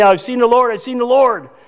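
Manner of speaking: high-pitched, excited screaming. Speaker retells a woman running to tell the disciples, retelling excited screaming. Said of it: "And she's screaming".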